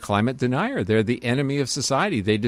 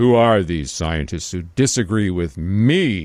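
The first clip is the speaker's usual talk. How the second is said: big, loud, booming godlike voice, drawn-out me; 4 semitones lower, 5 dB louder than usual. Recounting what Suzuki said at the mic, retelling Suzuki's big booming voice. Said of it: "in this big booming voice, like God was speaking".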